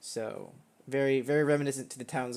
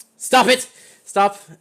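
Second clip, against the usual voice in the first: very loud, high, trembling, forced stern shout; 9 semitones higher, 16 dB louder than usual. Someone inside a guard tower calls out as you approach: shaky voice trying to sound stern. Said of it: "it's a shaky voice, but it's you can tell that they're trying to hold hold stern".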